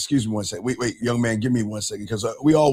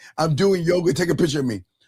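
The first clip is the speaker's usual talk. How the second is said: mocking, preening show-off guy voice; 6 semitones higher than usual. Mocking men who ask friends for photos: mocking imitation of a guy posing. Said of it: "I'm just saying".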